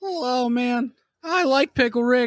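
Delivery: put-on very high, squeaky cartoon teen boy voice. Among friends who praise the voice, Morty voice. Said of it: "That's a pretty good voice. Kind of got the Morty".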